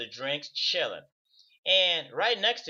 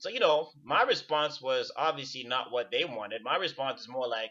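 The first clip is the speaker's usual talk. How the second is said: usual speaking voice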